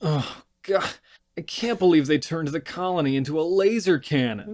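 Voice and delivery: mock spoiled, one-note annoyance. Describing a character's reaction, imitating him: mocking a bratty voice. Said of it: "that note is bratty".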